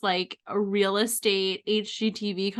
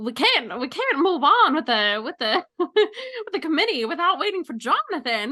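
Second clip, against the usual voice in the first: put-on transatlantic accent, much higher pitch; 6 semitones higher than usual. Describing a story idea, voicing the committee characters; transatlantic accent. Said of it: "everyone has a transatlantic accent".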